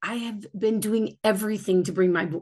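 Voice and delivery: ordinary talk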